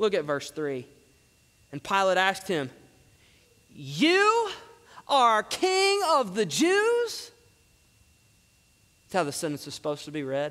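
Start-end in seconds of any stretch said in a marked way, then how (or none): 3.8-7.3 sarcastic, mocking stress on the word you. Reading a Bible verse as Pilate's question: mocking stress on you. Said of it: "it actually reads like this. And when you read it correctly, you understand, you really hear the mockery and the sarcasm".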